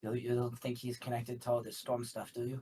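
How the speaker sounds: quick whisper under breath. Playing a character, whispering in Elvish to another character: quick whisper under breath. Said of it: "very quickly whisper under my breath in Elvish".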